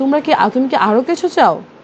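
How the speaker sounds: ordinary delivery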